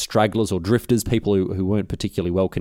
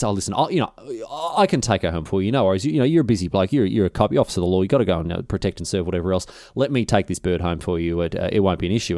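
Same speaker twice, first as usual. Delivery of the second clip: normal talking voice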